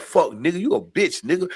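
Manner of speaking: hostile, aggressive, confrontational tone. Showing how the same word sounds in a fight: hostile, fighting tone. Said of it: "that's fighting".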